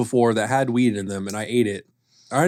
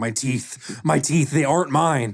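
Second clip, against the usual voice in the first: put-on, freaked-out, panicked voice. Retelling how a friend who was not sober acted: imitating a friend freaking out. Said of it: "started freaking out and going".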